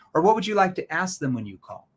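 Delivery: genuinely interested, curious, inquisitive tone. Coaching demo, asking prospects a question in a curious tone. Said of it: "notice that's a curious tone".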